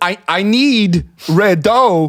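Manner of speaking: quirky, off-beat inflection on red dough. Showing a listener how he says one of the two lines you can do, imitating his inflection. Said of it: "it's the inflection".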